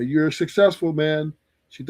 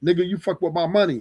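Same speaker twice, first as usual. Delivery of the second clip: put-on angry, pissed-off girl voice. Retelling the girl's reaction: imitating a pissed-off girl. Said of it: "the girl is pissed".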